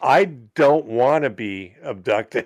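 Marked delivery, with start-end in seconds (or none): none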